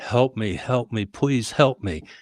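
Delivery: mock crying, whimpering through tears. Telling of a man who suddenly starts crying, imitating a man whimpering. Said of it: "he's whimpering".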